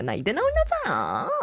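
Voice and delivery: grand, strong, elegant, high-pitched film-actress delivery. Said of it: "약간 이런 느낌으로".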